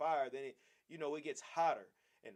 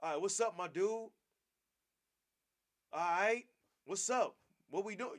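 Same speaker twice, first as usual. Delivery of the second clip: sarcastic, mocking, forced-cool put-on hip street slang; 4 semitones higher than usual. Imitating an oppressor at the job trying to sound hip: mocking imitation of forced hip slang. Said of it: "they're trying to be funny".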